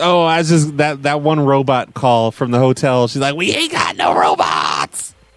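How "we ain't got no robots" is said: put-on strung-out voice, much lower and slower. Retelling a prank call to a hotel, imitating the woman who answered's meth voice. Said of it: "Like she had the meth, the meth voice".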